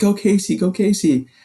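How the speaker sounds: play-acted very high, excited cheering scream. Retelling being cheered on at mile twenty-two: imitating Maddie screaming.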